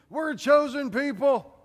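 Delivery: high, loud, smug mock delivery.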